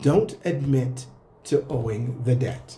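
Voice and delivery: really slow, deliberate emphasis on each word. Warning listeners about debt collectors, repeating the advice really slowly. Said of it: "I'm going to say this again really slow".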